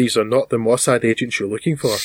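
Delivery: ordinary talk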